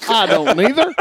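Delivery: put-on high country accent. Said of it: "you sound like a hick".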